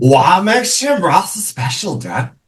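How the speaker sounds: put-on surfer dude voice. Teasing Dad along with the others, in a bad SNL surfer voice. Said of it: "broke into a bad SNL".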